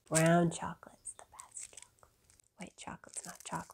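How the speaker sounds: soft, hushed, confiding whisper.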